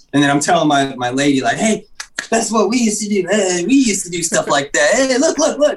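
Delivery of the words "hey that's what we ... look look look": super animated, very high, swooping, excited chatter. Retelling telling his lady about the game: imitating super animated talk. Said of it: "and just super animated".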